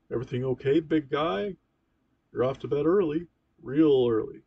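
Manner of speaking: hearty, booming, very loud big-pal bellow. Narrator voicing a father sitting on his son's bed, booming big pal voice. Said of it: "He speaks in his booming big pal voice".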